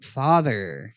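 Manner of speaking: low, bored, uninterested, unimpressed voice. Showing how the film line should be delivered, bored delivery of 'father'. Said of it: "You have to sound bored by it".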